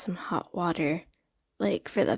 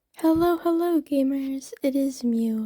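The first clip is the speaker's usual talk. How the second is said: easy, careful and gentle, pitched up; 6 semitones higher than usual. Greeting viewers while everyone else in the house sleeps, in a soft voice. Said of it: "Sorry for the soft voice".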